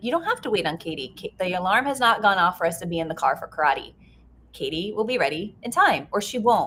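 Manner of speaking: normal talking voice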